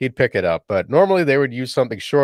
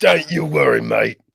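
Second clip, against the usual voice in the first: mock pirate accent, higher pitched; 4 semitones higher than usual. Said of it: "I don't know what accent it".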